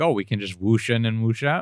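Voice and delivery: ordinary talk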